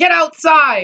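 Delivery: high-pitched, mock screaming. Retelling instructors boarding the bus: imitating instructors screaming. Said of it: "start screaming at you".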